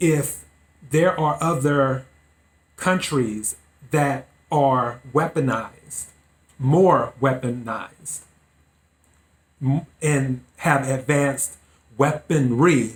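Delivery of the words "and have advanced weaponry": said slowly and carefully. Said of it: "I have to say it slowly".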